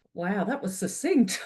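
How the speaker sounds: genuinely surprised, caught off guard, impressed reaction. Reacting to a panelist's very short one-line takeaway, sounding surprised. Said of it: "You sound surprised".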